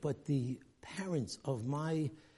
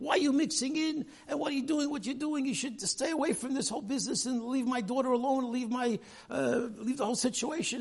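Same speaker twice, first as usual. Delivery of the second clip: put-on furious shouting, very high and angry; 10 semitones higher, 4 dB louder than usual. Retelling how a father answered a rabbi's call: imitating the father yelling. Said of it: "he starts yelling at Rabbi Kalbach".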